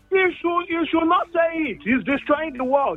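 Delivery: high-pitched yelling. Arguing with another speaker about a man, shouting. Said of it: "you're shouting this way".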